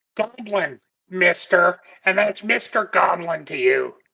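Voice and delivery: low, gnomish little creature voice. Character answers someone who called his voice weird, in a little gnome voice. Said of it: "you talk like you're a little a little gnome thing".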